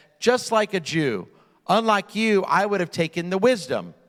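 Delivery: dry, cutting, sarcastic delivery. Telling a story, quoting Professor Peters answering the student Brandeis, retelling a sarcastic remark. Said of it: "smiling sarcastically".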